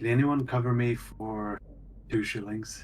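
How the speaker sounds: very low-voiced speech. Role-playing character asking the others to cover two shillings, very low voice. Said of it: "a very uh, low voice".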